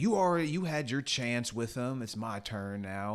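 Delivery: acted-out sharp, snappy snapping-back tone. Retelling how a character snapped back at the dad: imitating a snappy retort. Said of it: "he kinda snaps back".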